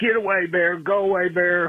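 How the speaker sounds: high, loud yell. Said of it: "and yelled".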